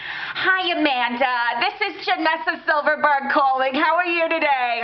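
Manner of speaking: very high, put-on New York accent. Retelling a sales call from women from New York: imitating a New York saleswoman. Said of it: "these women from New York".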